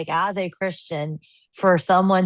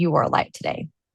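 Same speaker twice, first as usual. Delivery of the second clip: put-on whispering voice. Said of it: "she gave me a hug and she whispered".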